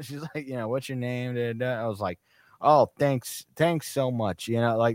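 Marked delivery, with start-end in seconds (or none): 2.6-4.8 put-on loud, thick Chicago accent held throughout. Speaker retelling picking up a deep dish pizza order, heavy Chicago accent. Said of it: "I just had a Chicago accent the whole time".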